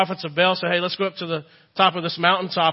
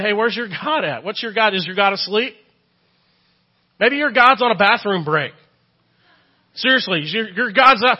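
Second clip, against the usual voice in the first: acted-out scornful, needling, mocking sarcasm; 3 semitones higher, 3 dB louder than usual. Retelling a prophet taunting other prophets about their silent god: imitating sarcastic mocking. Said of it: "spiritual cynicism or sarcasm".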